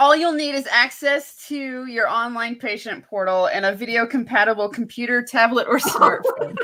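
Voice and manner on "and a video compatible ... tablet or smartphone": normal talking voice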